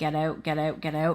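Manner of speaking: ordinary talk, nothing marked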